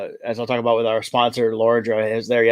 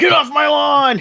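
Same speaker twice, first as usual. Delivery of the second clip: mock very high, crackly, creaky grumpy old-man holler; 4 dB louder than usual. Teasing a friend who says he's becoming a grumpy old man, mock yell. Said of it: "immediately yell".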